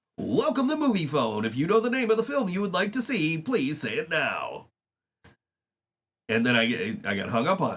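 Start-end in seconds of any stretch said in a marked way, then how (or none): 0.2-4.7 automated phone-line announcer voice. Retelling answering a stranger's repeated call, imitating Moviefone announcer. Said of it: "So I'm just like".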